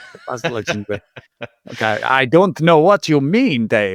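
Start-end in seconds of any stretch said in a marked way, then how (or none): 1.7-4.0 put-on old-world vampire voice and accent. Putting on an accent after Boyka is mentioned: Count Dracula voice. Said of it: "that's the accent I wanted. Count Dracula".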